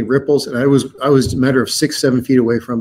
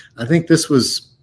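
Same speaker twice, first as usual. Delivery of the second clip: ordinary talk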